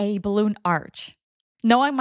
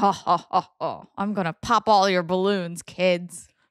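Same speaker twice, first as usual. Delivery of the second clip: put-on booming laughing voice, lower pitch; 3 semitones lower than usual. Imagining the listener's uncle taunting kids with balloons, in a put-on booming laughing voice. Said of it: "with a booming, like laughing voice".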